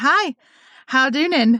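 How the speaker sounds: put-on high loud little-child talk. Retelling what a potty-training toddler said while waving: imitating Jane as a toddler. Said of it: "she would wave at us and she would say".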